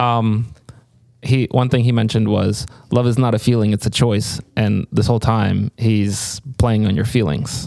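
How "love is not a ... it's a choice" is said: ordinary delivery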